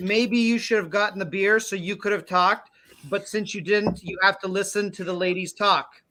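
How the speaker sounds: ordinary delivery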